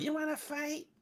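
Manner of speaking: very high, soft, squeaky, dopey mocking voice. Talking about a man in a video, the speaker mocks his stupid voice. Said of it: "with his stupid voice?".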